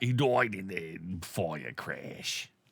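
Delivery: bad put-on Scottish accent. Acting out a movie scene answering the RCMP: bad Scottish accent as Gerard Butler. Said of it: "I don't know how to do a Scottish accent".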